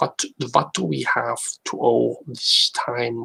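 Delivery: attempted, put-on German accent. Practicing voices live, attempting a German accent. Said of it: "There's a time for German German accent".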